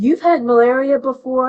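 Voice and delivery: loud, blurted indignant outburst.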